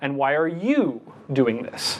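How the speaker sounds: "you" stressed, slow, with a falling tune.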